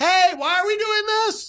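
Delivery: shouting. Yelling a question to someone so that he can hear. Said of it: "I'm yelling so he can hear me".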